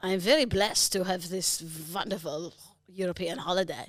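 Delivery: put-on French accent. Asked by a friend to say the sentence in French, French accent. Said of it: "Give us some French".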